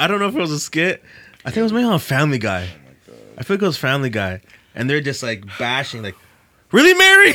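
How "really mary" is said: mock angry snapping, very high and loud. Retelling a Family Guy skit where Joseph snaps at Mary: imitating Joseph snapping angrily. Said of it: "Joseph was snapping".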